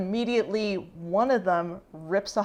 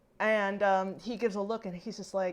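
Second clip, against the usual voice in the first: ordinary talk, nothing marked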